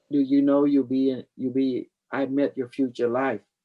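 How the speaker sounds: usual speaking voice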